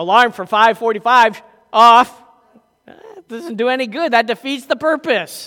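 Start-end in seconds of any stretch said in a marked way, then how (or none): 0.0-2.2 very loud, voice-assistant smart-speaker voice. Explaining why he avoids the bedroom Echo, imitating Alexa in a very loud voice. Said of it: "she in a very loud voice says".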